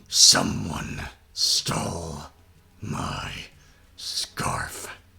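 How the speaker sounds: angry growling voice. Answering another character in the scene, angry growling character voice. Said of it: "You have gone full emo on me".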